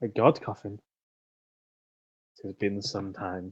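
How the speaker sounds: low muttering under breath. Voicing a character in a scene: muttering under breath. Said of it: "Leonard will mutter under his breath".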